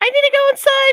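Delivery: squeaky, very high, little pleading voice. Retelling falling over in pain and answering 'are you okay', in a high, squeaky voice. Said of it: "Just that high, squeaky voice".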